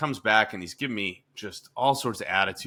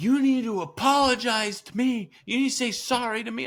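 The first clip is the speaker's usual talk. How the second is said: put-on very high, insistent sobbing; 14 semitones higher than usual. Retelling what he said once he started sobbing, imitating someone sobbing. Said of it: "so then he starts sobbing".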